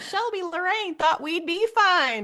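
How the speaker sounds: tiny, very high little southern voice. Retelling what Shelby Lorraine said, in Shelby Lorraine's little southern voice. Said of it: "she said in her little southern voice".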